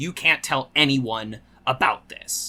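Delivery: mock very serious, grave tone. Retelling an episode where a mob boss warns his girlfriend: imitating a very serious tone. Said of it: "very serious with her".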